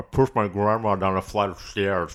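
words pushed out through a full mouth. A performer asked to repeat a line as if eating, talking with a mouth full. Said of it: "repeat the line you did as if you're eating food".

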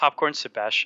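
level, flat, deadpan monotone delivery. Telling a skeleton joke to the others, saying its last words: monotone. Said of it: "There's a monotone where he said Popcorn Sebastian".

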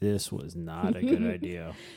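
grave, deep, slow, drawn-out, swooping narrator voice. Joking that a narrator comes in: Morgan Freeman narrator voice. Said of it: "narrator comes in and Morgan Freeman's voice going".

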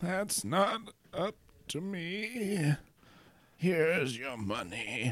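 put-on very quiet, very slow, hushed crazy old codger voice. Voicing the accountant, the speaker answers a player and hands over money: crazy old accountant voice. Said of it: "You're greeted by the accountant, who is just this crazy old dude. / who is just this crazy old dude. / who is just this crazy old dude".

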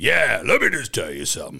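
raspy, creaky, rough smoker's voice. Imitating old actors who smoked to get a deep voice: imitating a deep smoker's voice. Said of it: "to get that deep voice".

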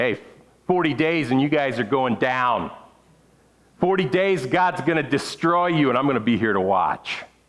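mildly gleeful, slightly gleeful voice. Preaching, acting out Jonah's warning to Nineveh: imitating gleeful Jonah. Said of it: "I think he was a little gleeful".

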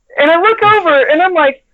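ordinary delivery

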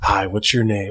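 very low, calm, soothing mind-trick voice. Retelling calming a flight attendant on a plane: imitating own low Jedi mind trick voice. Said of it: "I had to pull the Jedi mind trick voice".

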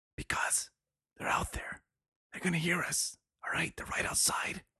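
quiet whispering. Answering James's question about why they are whispering, in a whisper. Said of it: "why are we whispering".

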